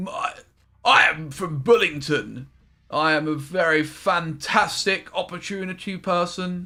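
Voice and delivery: posh upper-class English accent, slow and sing-song.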